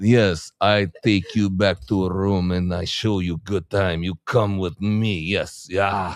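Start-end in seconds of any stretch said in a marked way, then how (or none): 0.6-5.2 fake, put-on Russian accent. Retelling a conversation, speaker starts talking in a put-on Russian accent. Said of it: "I start talking in a Russian accent".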